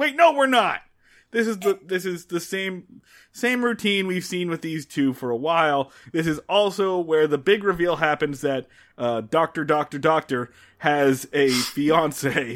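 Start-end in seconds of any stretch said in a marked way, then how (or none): 0.0-0.8 mock-angry, much higher pitch. Recapping an episode, the speaker acts out Andy's reply, imitating someone getting mad. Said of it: "he gets so mad and goes".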